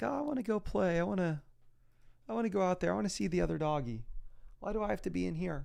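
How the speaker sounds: put-on whiny, pleading dog voice. Voicing a dog that wants to go play with another dog: voicing the dog wanting to play. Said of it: "She's acting like".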